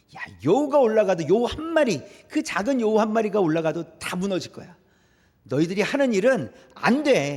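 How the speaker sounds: contemptuous, taunting voice.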